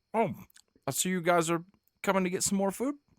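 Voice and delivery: very high voice, talking with mouth full. Narrator voices Paldo as the group comes for more food, talking with mouthful. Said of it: "Paldo has a mouthful of turkey leg".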